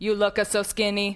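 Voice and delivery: mechanical robot-like voice. Describing a feeding machine's Italian grandmother model, iFeed robot voice. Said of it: "in robot voice".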